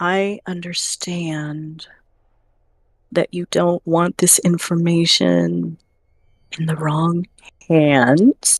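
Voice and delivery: whispered voice. Leaning down to a dwarf character, offering help quietly: whisper. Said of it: "lean down and whisper".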